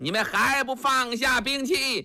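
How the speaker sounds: high, hollering battle cry at top of voice.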